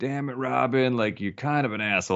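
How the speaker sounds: guilty self-reproach, spoken half to herself. Retelling a movie scene where a character mutters to herself: imitating muttering to herself. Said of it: "mutters to herself".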